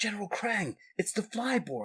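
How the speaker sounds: high, hushed, barely audible half-whisper. The Flyborg calls General Krang about an experiment that got away, half-whispering. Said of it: "Why are you whispering?".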